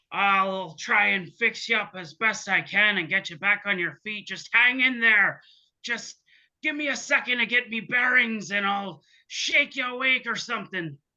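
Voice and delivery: put-on storybook pirate voice. Voicing a character talking to a cat: pirate voice. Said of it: "how do I talk like a pirate?".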